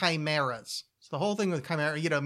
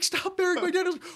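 put-on very high, wailing little-girl shriek. Recalling an anime scene that left them half crying, imitating a little girl screaming. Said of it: "this little three-year-old girl screaming".

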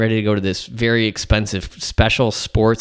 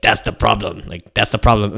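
put-on old martial arts master accent. Retelling what a man said after pressing on the speaker's neck, Mr. Miyagi impression. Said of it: "And he's like".

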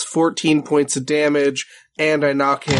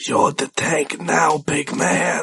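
intimate, ear-close, voiced stage whisper. Voicing a half-whisper heard inside another character's head: half-whisper in the ear. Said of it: "a whisper, but it goes inside of your brain".

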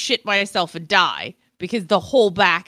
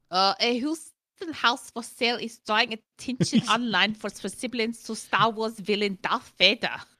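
soft German accent, slipping in gradually; 4 semitones higher, 6 dB quieter than usual. Reading a news item aloud, in a German accent. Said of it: "Why are you dropping to a German accent?".

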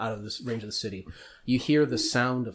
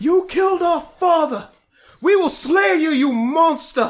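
shrill, booming, very high, loud, drawn-out scream; 11 dB louder than usual. Voicing one of two sword-wielding characters beside three bodies: screaming. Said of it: "One of them screaming".

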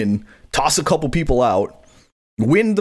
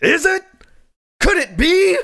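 very high, slow, stretched-out, drawn-out cry. Calling a surprise return at number thirty as a JR impression. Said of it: "a J R impression".

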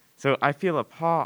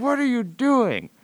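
very high, confused, bewildered half-shout; 12 semitones higher, 3 dB louder than usual. Retelling a friend's dad walking in on the speaker with a cat: imitating a confused half-yell. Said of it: "confused half-yell".

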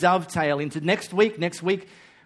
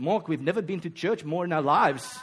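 put-on South African accent; 3 dB quieter than usual. Retelling what people said to him, in a South African accent. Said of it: "in the South African accent".

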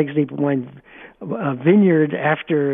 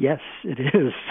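put-on sheepish voice; 3 dB quieter than usual. Recalling a woman's answer to the speaker's question about a wine, retelling a sheepish reply. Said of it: "she very kind of sheepishly said".

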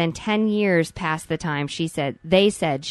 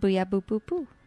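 fake babyish voice, quieter; 2 semitones higher, 6 dB quieter than usual. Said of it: "you've been doing way too much baby talk".

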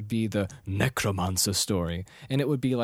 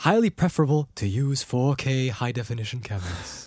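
bad, horrible, nasal put-on British accent. Quoting own words at seventeen, imitating own horrible British accent. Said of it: "my horrible British accent".

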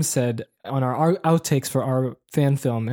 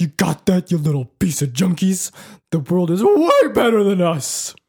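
high, goofy voice with pitch swooping all over; 5 semitones higher, 4 dB louder than usual. Retelling a friend's line from a home movie: imitating a friend's Scooby-Doo-like voice. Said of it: "Sound like Scooby-Doo".

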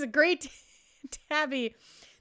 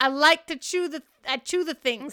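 put-on pet voice with accent drifting toward Scottish; 3 semitones higher, 3 dB louder than usual. Playing the pet during a chat, put-on accented pet voice. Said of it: "It could turn Scottish at a moment's notice".

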